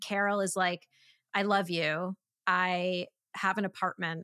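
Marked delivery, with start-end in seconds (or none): none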